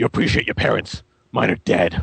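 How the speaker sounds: gruff, grumpy put-on hero voice. Retelling what he said to a kid who asked for a photo, gruff grumpy Batman voice. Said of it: "kept going with the gruff, grumpy Batman".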